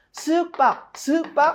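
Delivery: 쓱 glided light and high, 박 slammed hard. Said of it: "쓱박 이렇게 표현하거든요".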